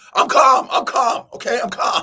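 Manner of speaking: mock very high, loud, agitated, repeated insistence. Speaker giving an example of tone not matching words, mock-agitated and not calm. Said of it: "you don't sound very calm to me".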